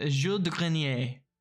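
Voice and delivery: attempted, best-effort French accent. Reading out the name of another player in the game: attempted French accent. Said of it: "the best French accent I could say".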